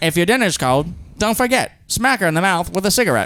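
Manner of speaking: put-on old-time 1950s radio announcer-style voice. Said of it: "I should be talking in a nineteen fifties radio voice".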